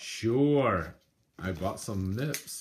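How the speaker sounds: very slow sarcastic drawl, sure stretched out. Answering an offer to do shots later: sarcastic tone. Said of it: "You sound so sarcastic".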